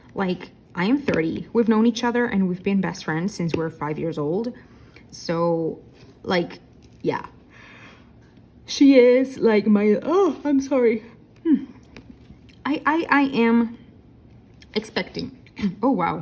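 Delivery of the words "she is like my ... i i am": sudden high, odd shift in voice. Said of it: "That was a really weird voice shift".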